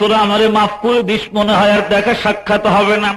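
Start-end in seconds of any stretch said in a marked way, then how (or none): none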